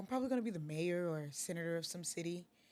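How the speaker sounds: put-on offhand, matter-of-fact, nonchalant tone. Retelling a classmate's answer about his future, imitating a nonchalant tone. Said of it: "the way he said it, all nonchalant".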